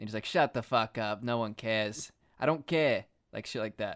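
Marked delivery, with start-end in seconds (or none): 0.2-3.0 put-on loud, slow New York mobster accent. Joking about how a rich man would talk, New York mob accent. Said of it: "get like a mob accent".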